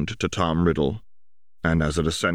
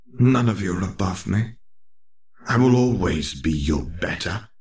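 sibilant hissing snake voice. Pausing at the common room exit toward his staring housemates, hissed in Parseltongue. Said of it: "he hissed in parcel tongue".

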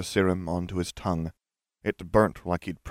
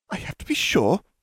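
biting, sharp snapping tone, very high-pitched; 12 semitones higher, 4 dB louder than usual. Narrator voicing a woman replying to a sneering man: snapped. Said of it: "Umbridge snapped".

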